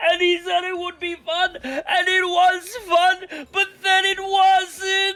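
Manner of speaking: put-on slow, sloppy, slurred drunken rambling. Voicing a character at a bar describing the carnival: drunkenly describing. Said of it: "sort of drunkenly describing the carnival".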